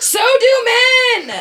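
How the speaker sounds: high, loud shouting.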